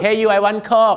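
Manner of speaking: rude, loud, high-pitched barking tone.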